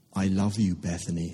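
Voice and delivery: soft, hushed, quiet voice, cracking and breaking. Narrator reads Calder speaking to Bethany, soft with his voice cracking. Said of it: "he says softly, his voice cracking".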